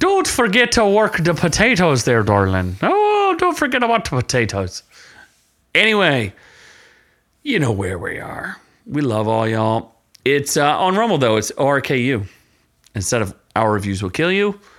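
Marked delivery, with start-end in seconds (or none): 0.0-4.8 put-on Irish accent, higher pitch. Told to do it in the irish accent, the speaker goes along: irish accent. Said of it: "we have to do it in the Irish accent".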